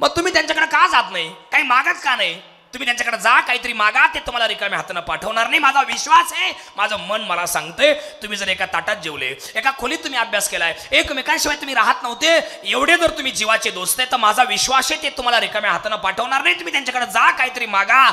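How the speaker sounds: loud put-on voice. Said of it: "जी मोठ्याने बोलणार आहे ती सुशीला आहे".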